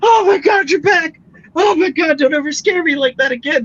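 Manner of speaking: very high, gushing, overjoyed relieved cry. A character tackle-hugs Sayer the minute she sees her back; overjoyed relieved greeting. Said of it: "she just goes".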